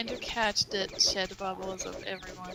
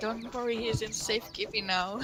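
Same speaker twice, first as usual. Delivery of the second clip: normal talking voice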